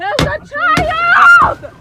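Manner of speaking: screaming. One of the people at a traffic stop, screaming. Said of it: "they're screaming".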